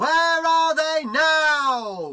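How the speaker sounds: very high, slow, loud, drawn-out dramatic announcer.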